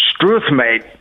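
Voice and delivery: bad, fake attempt at Australian accent. Starting a party game, the speaker tries a bad Australian accent. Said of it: "This is me trying to speak Australian".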